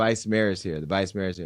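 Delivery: ordinary delivery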